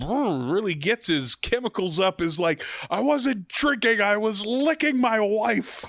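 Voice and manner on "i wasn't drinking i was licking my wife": loud, high-pitched cartoon-style yell. Retelling a cartoon scene, quoting Homer Simpson: loud Homer Simpson voice. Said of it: "real loud".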